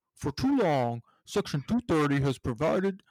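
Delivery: loud, big, puffed-up booming big-guy voice. You ask listeners to bear with you as you try your William Barr big guy impersonation. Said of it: "this is my big guy impersonation here".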